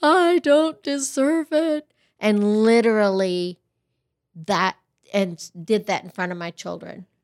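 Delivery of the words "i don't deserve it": put-on tearful crying, high and slow, words drawn out. Retelling crying over a Christmas necklace gift: imitating own past crying. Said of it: "crying and being like".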